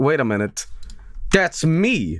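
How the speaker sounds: normal talking voice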